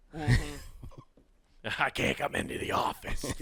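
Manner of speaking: soft, breathy, croaky heavy smoker's voice. Joking about calling in sick with a wrecked voice, imitating Bart's aunts. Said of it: "sounded like I was at an open mic the night before and I smoked nineteen cigarettes".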